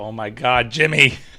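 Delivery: put-on angry voice. Retelling what was heard in the background, imitating Jimmy being mad. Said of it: "you just hear Jimmy in the background go".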